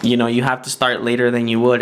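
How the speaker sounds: usual speaking voice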